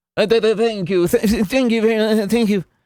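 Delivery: very high, halting stammer with stuttered repeats. Mocking how someone accepts applause: imitating stammered thank-yous. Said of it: "accepts all of his applause like".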